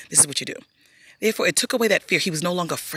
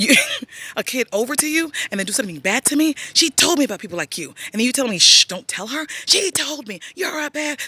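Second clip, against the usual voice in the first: put-on child scream, higher and louder; 8 semitones higher, 4 dB louder than usual. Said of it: "So he's screaming at this person".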